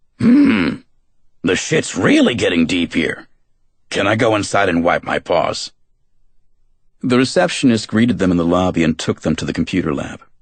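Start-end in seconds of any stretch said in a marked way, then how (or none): 0.2-5.7 deep baritone cartoon dog voice with swooping pitch. [name] sniffs the air and answers Vince in his baritone Sam the dog voice. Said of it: "did his baritone Sam the dog voice".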